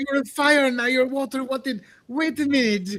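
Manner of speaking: frantic, very high, freaked-out babbling. Voicing Crom reacting to a sudden splash: freaking out. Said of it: "Crom freaks out".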